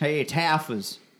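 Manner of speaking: put-on Boston accent. Asked to say the name as it should sound, boston accent. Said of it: "that was more Boston".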